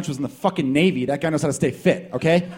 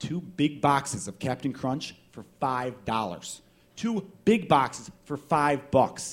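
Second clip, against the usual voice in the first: very slow, deliberate, spelled-out announcement. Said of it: "did you guys not hear me".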